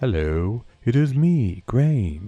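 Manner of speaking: loud, swooping, sing-song character voice. Voicing the main character Graham for his cutscenes, in the Graham character voice. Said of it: "I will be using my Graham voice".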